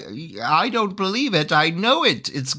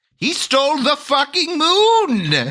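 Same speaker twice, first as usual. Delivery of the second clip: wild, crazy, pitched-up wizard voice, moon drawn out; 7 semitones higher than usual. Playing the defense in a group scene, crazy wizard voice. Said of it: "I could do my crazy wizard voice".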